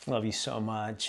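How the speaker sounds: low, soft whisper. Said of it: "I just kinda quietly whispered to her".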